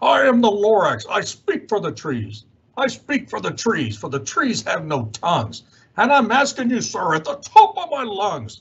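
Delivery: sharpish, bossy, curt scolding voice. Reading a story aloud, voicing the Lorax speaking to the narrator, sharpish, bossy Lorax voice. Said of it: "He was shortish and oldish and brownish and mossy, ... and he spoke with a voice that was sharpish and bossy".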